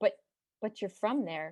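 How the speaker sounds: ordinary delivery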